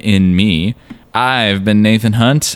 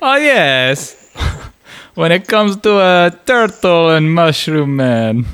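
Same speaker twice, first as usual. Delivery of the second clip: fake accent somewhere between Italian and Russian; 7 semitones higher than usual. Answering whether you are a serial killer, in a put-on Italian-Russian accent. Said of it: "Russian accent or the Italian accent".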